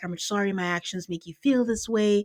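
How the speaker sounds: seductive, sexy tone of voice. Retelling how Will apologizes to a crying woman, imitating Will's low sexy voice. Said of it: "Will has like this low tone, sexy voice".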